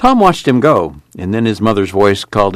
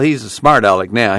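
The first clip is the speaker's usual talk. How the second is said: plain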